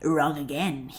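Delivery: hissed words. The talking corpse answers his questioners, hissing. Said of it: "he hissed".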